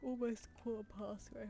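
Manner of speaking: spoken mid-yawn, tired. Chatting while working on a shape for the neck, yawning. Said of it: "sorry, I'm yawning".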